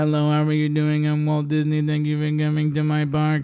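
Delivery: flat, fast, robotic computer-generated AI voice. Speaker complaining about the park's voice, imitating it in a robotic AI Walt Disney voice. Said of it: "That is giving very A I robotic".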